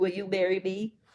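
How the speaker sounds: ordinary delivery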